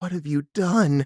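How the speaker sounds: panicked. Recapping an episode, retelling Pam's line after a long pause with Jim: imitating Pam's panicked voice. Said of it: "in this really panicked voice".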